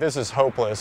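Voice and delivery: ordinary talk, nothing marked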